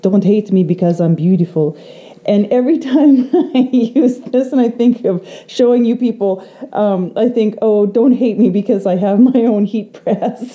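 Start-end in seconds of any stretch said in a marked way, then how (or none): 0.0-1.8 put-on fancy, posh French accent. Quoting a model's line from an old perfume commercial, fancy French accent. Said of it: "said in her fancy French accent".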